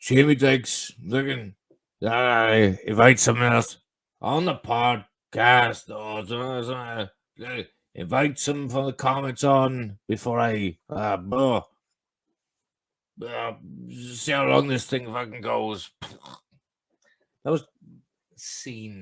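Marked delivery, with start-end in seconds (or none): 0.0-15.9 put-on drunk voice. Imitating the other speaker's words from moments ago: impression of Carl. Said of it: "my impression of Carl".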